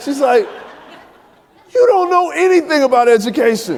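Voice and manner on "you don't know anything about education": mock very high-pitched, loud, incredulous, scoffing rant. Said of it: "She starts going off".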